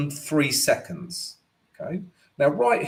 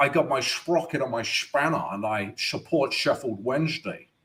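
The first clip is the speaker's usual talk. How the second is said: soft, put-on film-star voice, kept in character; 2 semitones lower, 6 dB quieter than usual. Speaker does a requested impression for the audience: Sean Connery impression. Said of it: "that was my Sean Connery impression".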